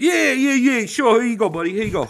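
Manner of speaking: put-on sudden Italian accent. Retelling handing a cop his license, slipping into an Italian accent. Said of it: "This fucking Italian accent".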